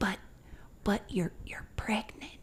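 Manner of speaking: very hushed, breathy, stammering whisper. Telling a story, speaker quotes a man who looked both ways first: retelling a whisper. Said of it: "he like whispers to me".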